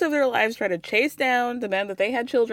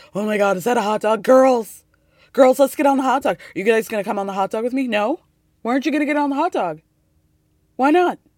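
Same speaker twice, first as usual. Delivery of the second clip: loud, husky, excited, gushing voice; 6 dB louder than usual. Recapping Luann spotting a floating hot dog at sea: Luann impression, husky, excited. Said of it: "with that husky voice of hers".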